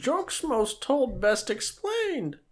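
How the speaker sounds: very high-pitched in-character voice. Joking with someone, do a Yoda impression like Michael and Holly's in The Office. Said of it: "you sound like Michael Scott and Holly in the office when they try to do their Yoda stuff".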